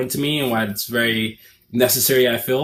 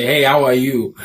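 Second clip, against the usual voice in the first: raised Nigerian accent, switched into mid-sentence; 5 dB louder than usual. Describing how they switch accents, greeting someone in a Nigerian accent. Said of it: "switch accents and go to a Nigerian accent and then say".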